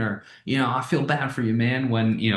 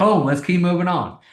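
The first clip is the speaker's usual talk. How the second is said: urgent, pressing tone, raised and pitched up; 6 semitones higher, 5 dB louder than usual. Teaching tonality while moving on, an urgent, pressing tone. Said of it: "That was urgency tonality".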